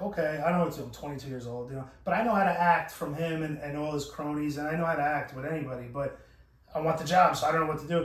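ordinary talk, nothing marked

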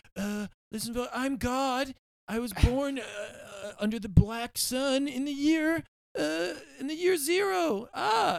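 very high, drawn-out delivery. Mocking how Trump would tweet: imitating Trump. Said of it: "Trump would tweet, like".

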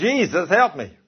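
high, screamed voice. Retelling falling through a hole: imitating own scream. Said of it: "I screamed".

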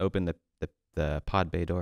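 usual speaking voice

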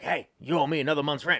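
voice of a heavy chain smoker. Retelling a woman's line in a scene as a man walks out, smoker voice. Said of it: "She's got the smoker voice".

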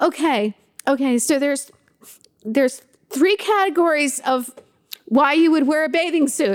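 high, tearful voice, hiccuping sobs. Retelling to the listener how they sat up crying, imitating hiccuping through tears. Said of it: "you're like hiccuping".

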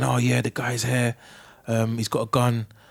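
put-on whisper. Retelling a store manager's call to the police: imitating someone whispering. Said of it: "Why are you whispering?".

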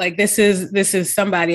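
ordinary talk, nothing marked

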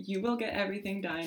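ordinary talk

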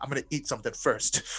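put-on angry voice. Retelling a hungry companion's reply: imitating someone angry. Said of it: "he's so angry".

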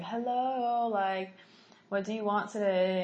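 trance-like, spaced-out, dazed voice. Retelling how a woman at the sushi spoke: imitating a trance-like voice. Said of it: "It was like she was in a trance".

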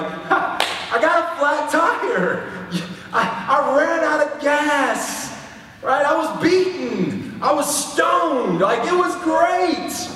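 mock gleeful delight, very high and drawn out. Acting out someone returning from a trip, mock-joyful. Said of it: "just joyfully saying like".

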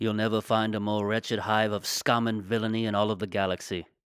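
put-on elderly man's voice with an English accent. Improvising Obi-Wan Kenobi leaving the Bronx: Obi-Wan Kenobi voice. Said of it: "He's like".

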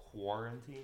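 "quarantine" said with a rising, questioning pitch. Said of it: "did I say it like a question".

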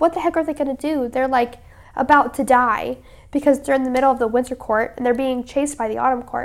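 ordinary talk

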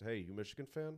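bone-dry, expressionless, deadpan delivery. Retelling a stranger's question at an airport gate: imitating a deadpan question. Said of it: "he's got this deadpan look on his face".

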